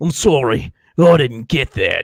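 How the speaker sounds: put-on deliberate British accent. Retelling an audiobook line by a Terminator: Jason Statham-like British accent. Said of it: "that British accent that's like, um, Jason Statham".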